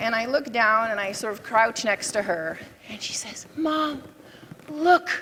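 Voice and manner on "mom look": put-on toddler's smallest hushed voice, pitched up. Retelling how a three-year-old spoke to her mother: imitating a toddler's quietest voice. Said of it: "in the quietest voice that a three-year-old can utter".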